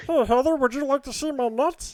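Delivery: high, little cartoon squirrel puppet voice. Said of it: "trying to do his voice".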